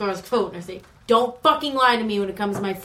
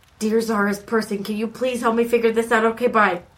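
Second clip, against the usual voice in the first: soft whispered delivery. Praying in character into cupped hands so others won't hear: whispering a prayer. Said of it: "I whisper in my hands".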